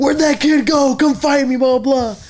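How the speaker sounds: play-acted, shrill, very high, loud shouting. Retelling what a man shouted while looking for a kid: imitating someone yelling. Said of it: "he was yelling".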